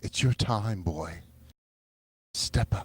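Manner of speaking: soft, quiet put-on voice. Hyping someone up to take their turn: Mary Anne Hobbs voice. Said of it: "I'll even do it in the Marianne Hobbs voice".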